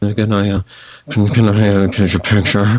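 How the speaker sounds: halting, stumbling, mumbled delivery. Retelling how a kid at a convention asked for a picture: imitating a mumble. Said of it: "he mumbles to me".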